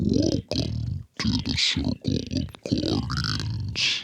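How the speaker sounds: very slow, creepy, whispered demon voice. Speaking again when asked to try the voice: creepy monster voice. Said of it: "That is creepy".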